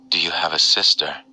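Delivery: gently whispered, soft, pleasant voice. A woman asks the narrator a question, in a pleasant but whispery voice. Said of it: "she asked in a pleasant but whispery voice".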